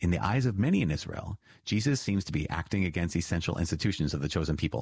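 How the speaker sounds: ordinary delivery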